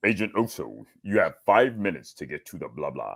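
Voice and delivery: very deep voice, dropped right down low. Retelling his cartoon job voicing a watch: James Earl Jones voice. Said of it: "wanted me to do a James Earl Jones voice".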